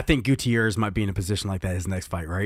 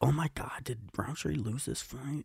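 put-on whisper, quieter; 3 semitones higher, 12 dB quieter than usual. Retelling watching a fight alone, imitating own whisper to oneself. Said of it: "it's like I'm kinda whispering to myself".

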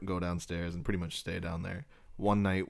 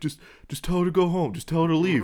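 acted very loud, very high, shrill meltdown; 11 semitones higher, 10 dB louder than usual. Telling a story about a son confronting his dad, retelling the dad losing it. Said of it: "his dad just loses it".

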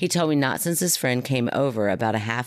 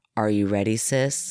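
weird, flat, toneless monotone, unlike his usual voice; 2 semitones lower than usual. Retelling what he asked his sis, in a flat monotone. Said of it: "In a monotone, weird way that was completely unlike him".

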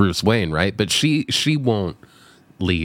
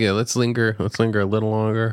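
normal talking voice

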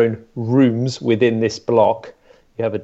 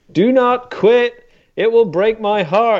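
mock very high, drawn-out American drill shout; 11 semitones higher, 3 dB louder than usual. Retelling instructors shouting at you through a traffic cone, in American accents. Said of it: "in the American accents".

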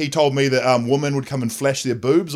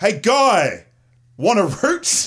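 mock very slow, drawn-out, swooping holler from afar; 8 semitones higher than usual. Retelling how someone yelled out from the nearby jail, retelling a shouted call. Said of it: "Someone just yells".

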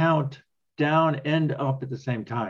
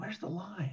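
very quiet, high, hushed mutter under the breath; 5 semitones higher, 16 dB quieter than usual. Retelling a rower's count call, imitating Brody muttering under his breath. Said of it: "I hear it under his breath".

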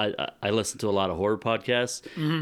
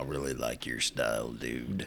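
real deep put-on voice, very low pitch; 9 semitones lower, 8 dB quieter than usual. Doing a deep morning voice, joking about waking up: real deep voice. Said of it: "you just get that real deep".

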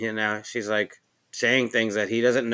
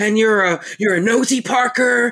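yelling, much higher pitch and louder; 11 semitones higher, 6 dB louder than usual. Retelling the show scene where Roy scolds her for coming home late, imitating Roy yelling. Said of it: "He yells at her".

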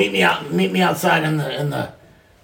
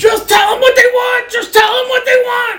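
shrill, very high, loud screaming and shouting; 7 dB louder than usual. Telling a story, acting out a man screaming at another man, retelling a scream. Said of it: "he starts screaming at the dude".

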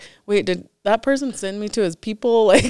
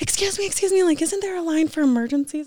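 mock screaming like a woman, much higher pitch; 8 semitones higher than usual. Retelling how a woman ran up in the bathroom line, imitating a screaming woman. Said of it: "comes running up screaming, like, in my ear".

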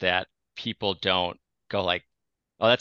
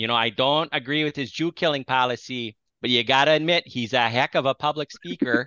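put-on Minnesota accent, higher; 5 semitones higher than usual. Imitating people from Minnesota reacting to a public speaker: Minnesotan speakers. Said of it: "if Hitler was from Minnesota, I think people would be like".

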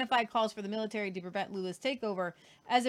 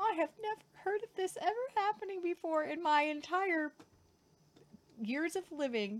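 high, sarcastic mock disbelief. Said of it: "That's sarcasm".

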